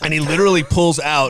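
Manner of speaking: plain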